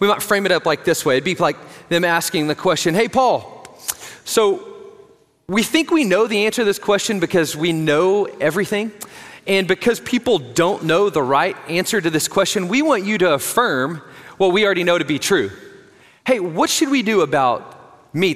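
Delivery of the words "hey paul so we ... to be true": ordinary talk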